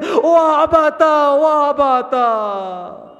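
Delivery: acted, very slow, drawn-out sobbing lament. Retelling the story of Sakina calling for her father: imitating a crying child. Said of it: "Sakina starts crying".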